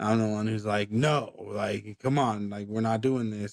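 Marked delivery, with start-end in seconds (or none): 0.9-3.5 put-on stern voice. Retelling telling his one-year-old son no: imitating own stern voice. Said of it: "And my stern voice is".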